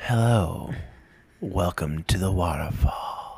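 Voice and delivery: spa-style ASMR host voice. Planning a Zen ASMR video for the next episode, a host demos: Zen ASMR voice. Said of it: "We're going to make a Zen ASMR video. Like".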